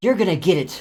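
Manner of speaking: growled, snarling voice. Voicing a monster struck in the back as she passes: snarling.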